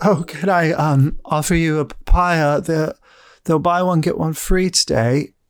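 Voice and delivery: slow, high, tearful, weepy delivery. Voicing a weeping fruit seller offering a papaya: weeping fruit seller. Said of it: "you just see a woman just, like, crying".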